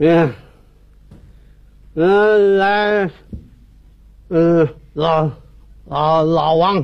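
put-on low, slow, slurred drunk man's voice.

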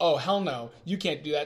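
ordinary talk, nothing marked

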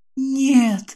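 hushed whisper. Jane answers Captain Harris's threat against her friend; whispered. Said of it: "шепчу я".

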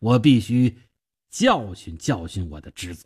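plain

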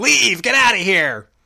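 mild, half-hearted acted yell. Recounting a scene where the aunt yells at the son, retelling a yell. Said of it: "just yells at him".

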